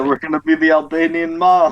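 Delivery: put-on Italian accent. Joking about becoming the albanian mob: italian accent. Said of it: "he said it with an Italian accent".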